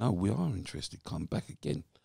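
ordinary talk, nothing marked

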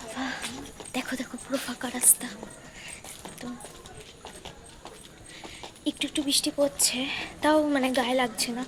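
very soft, hushed speech. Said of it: "একদম আস্তে আস্তে কথা বলছি আমি".

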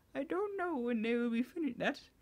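put-on high-pitched elderly woman's voice. Trying out a voice for a character's line: an old lady voice. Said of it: "Old lady".

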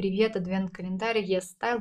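ordinary talk, nothing marked

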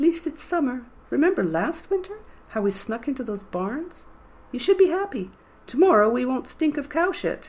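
put-on old woman voice, very high pitched. A man answers a woman, in his put-on old woman voice. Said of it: "Mickle answered in his old woman voice".

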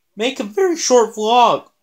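high voice cracking and breaking on the words. Vlogger apologizing for a short vlog after forgetting the intro, voice cracking. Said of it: "My voice cracked".

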